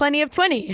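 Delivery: ordinary delivery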